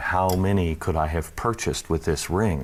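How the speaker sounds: usual speaking voice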